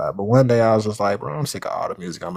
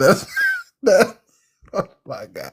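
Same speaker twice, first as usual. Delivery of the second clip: stifling laughter, higher; 10 semitones higher than usual. Reacting to another speaker's joke, trying not to laugh. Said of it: "I'm trying not to laugh".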